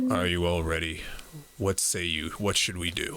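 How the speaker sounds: low, captain-style voice. Game narrator voices the captain addressing everyone as a ship approaches, quietly. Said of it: "The captain says quietly to everyone".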